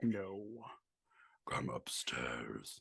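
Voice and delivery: menacing, very deep, hushed, sinister calling voice. Acting out the ghostly voice people hear, in a sinister voice. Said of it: "Because it's a sinister voice".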